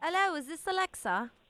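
put-on British accent. Prank calling a girlfriend, pretending to be a British classmate: British accent. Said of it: "Becca does a dope-ass British accent".

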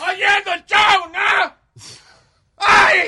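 shouting. Opening the show and greeting the listeners: shouting. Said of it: "¿Por qué estoy gritando?".

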